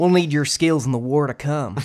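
put-on Southern accent.

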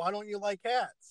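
openly angry tone. Retelling a line that he says to Greg, imitating an angry question. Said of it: "especially how he says it angrily".

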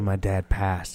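put-on solemn, sorrowful, low, hushed delivery. Speaker acts out a man answering a woman's question about his parents, mock-sad.

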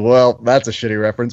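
plain

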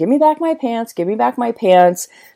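yelling, high-pitched, repeated screaming. Telling a story, she re-enacts chasing a man down the street, retelling a scream. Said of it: "I'm chasing after this homeless guy screaming".

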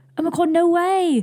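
high, thrilled, stoked, blurted-out voice.

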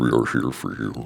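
very low, rasping, creaky demonic growl. Retelling how he talks in his sleep: demonic sleep-talking voice. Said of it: "It's like a demon when you talk".

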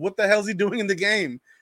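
high-pitched hollering scream. Retelling watching a player's game on TV, retelling screaming at the TV. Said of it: "I'm sitting here screaming at my TV".

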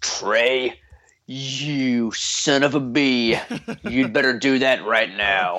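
very slow, deliberate, authoritative put-on policeman voice. Ordering a listener to post a picture: put-on authoritative policeman voice. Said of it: "That's my authoritative policeman voice".

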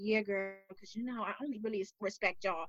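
put-on side whisper. Mocking someone who spoke in front of the whole crew, imitating a side whisper. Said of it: "y'all weren't off to the side whispering".

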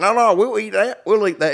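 put-on Oklahoma accent. Retelling what Justin said on the first night, imitating Justin's Oklahoma accent. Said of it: "That's why I gave him that accent".

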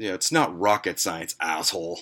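acted muttering under breath. Retelling how a kid turned around and insulted him, acting out muttering under breath. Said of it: "he says under his breath".

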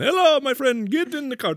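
put-on Middle Eastern accent. Play a Middle Eastern cowboy greeting someone, in a put-on Middle Eastern accent. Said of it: "use his real accent".

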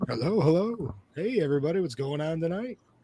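weird, odd put-on radio voice. The producer, asked to say hello to everybody, greets them in a weird radio voice. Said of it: "why'd you put on a weird radio voice".

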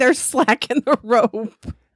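loud, high hollering voice. Recalling what he kept shouting to the others, retelling his hollering. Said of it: "I kept hollering".

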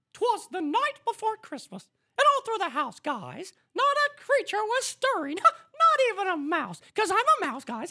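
squeaky, loud, sing-song delivery. Podcast host reads a snippet of Twas the Night Before Christmas in a Mickey Mouse voice. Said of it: "starting with Mickey Mouse".

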